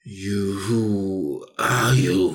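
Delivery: deep, grumbly, echoing, reverberating monster voice. Storyteller voicing the thing that speaks in the story: loud reverberating voice. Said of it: "it has a loud, reverberating voice".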